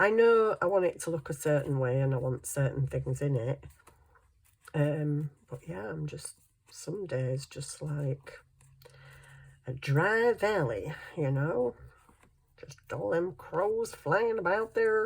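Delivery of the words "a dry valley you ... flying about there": clumsy, poor, put-on American accent. Talking about a creative dry spell, slipping into a bad American accent. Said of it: "That was a really poor accent".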